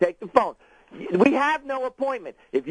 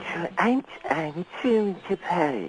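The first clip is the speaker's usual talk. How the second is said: soft, breathy, babyish put-on voice; 6 semitones lower, 4 dB quieter than usual. Attempting an impression on a call: Truman Capote impression. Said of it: "I'm gonna try and do Truman Capote".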